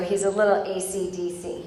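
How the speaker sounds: ordinary delivery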